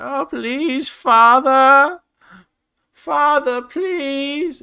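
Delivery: very high, slow, loud, drawn-out sad voice. Game master recalling the voice used for a character, doing Doru's sad, distant voice. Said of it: "What is my Doru voice?".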